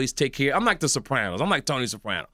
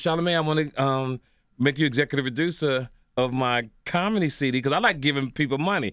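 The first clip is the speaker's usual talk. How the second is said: usual speaking voice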